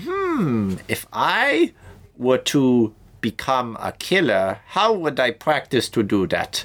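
high, slow, vaguely German accent.

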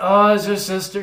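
mock offhand, dismissive tone. Retelling cartoon parents brushing off their son: imitating dismissive parents. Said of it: "they're very dismissive about it".

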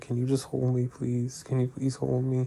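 mock hard sobbing, tearful pleading tone. Retelling how she cried and begged to be held: imitating someone crying hard. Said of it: "she's crying really, really hard".

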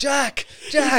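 mock shouting, high-pitched and loud.

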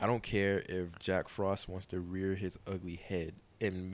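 normal talking voice

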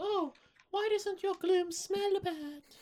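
very high, chirpy, put-on British accent. Retelling a moment from the show, voicing Misty: British-sounding Misty impression. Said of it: "Misty isn't British".

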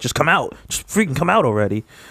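mock dog voice, sounding frustrated. Voicing the barking dog, who seems upset by the dick talk: voicing the dog as frustrated. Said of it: "she's frustrated".

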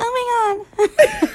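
put-on, really girly voice, very high-pitched. Giving a voice to one's own body part: put-on really girly voice. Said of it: "really, really girly".

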